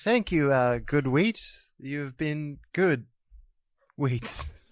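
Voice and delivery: slow, zoned-out, spaced-out stoned voice. Playing a character who arrives in a haze, thanking someone: acting stoned. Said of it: "Sorry, I'm still a bit stoned".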